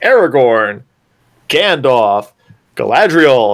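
announcer-like cheap school filmstrip narrator voice. Imitating the narrator of a cheap school educational video: educational video narrator voice. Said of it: "you got the narrator going".

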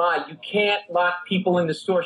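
put-on scolding yell, reined in to half-yell. Retelling speaking to the mother: imitating own past yelling. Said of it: "I'm yelling at her".

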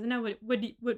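put-on stammering speech. Retelling a film scene, quoting Edward asking her: imitating Edward's stutter. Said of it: "his little stutter is so cute".

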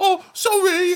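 very high, squeaky character voice, pitched way up. Quoting a meme from Inbetweeners: Jay from Inbetweeners impression. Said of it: "it's just Jay going".

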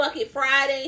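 usual speaking voice

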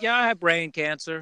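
put-on nonchalant, casual delivery. Retelling how a friend mentioned his brain cancer: imitating a nonchalant tone. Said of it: "very nonchalant about it".

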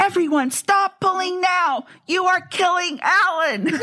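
play-acted, very high, top-of-lungs commanding shout. Recounting yelling at everyone in a tug of war to stop pulling: retelling a loud serious yell. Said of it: "I yelled at the top of my lungs in my most serious voice".

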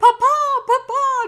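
mock screaming. Retelling a story where a daughter calls to her father, retelling a scream. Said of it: "is screaming like".

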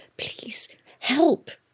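desperate, urgent, whispered hiss. A narrator voicing a man stuck at a hole who turns to a girl, desperate hiss. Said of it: "he turned to Hester and hissed".

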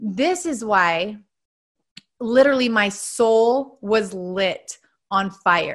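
slow, moved, heartfelt emotional delivery. Podcast host explaining why they got into coaching, emotional. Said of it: "this is making me emotional".

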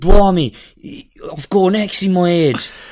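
terrible put-on Australian accent. Joking about Australian audiobooks, voicing a character: bad Australian accent impression. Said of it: "his impression's as bad as mine".

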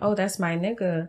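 ordinary talk, nothing marked

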